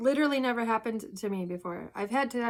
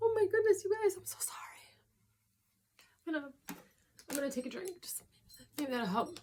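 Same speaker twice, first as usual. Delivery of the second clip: crying, tearful voice, higher pitch; 8 semitones higher, 4 dB quieter than usual. Host ranking a list reacts to one entry, in a crying voice. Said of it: "I hate all my voices when I'm crying".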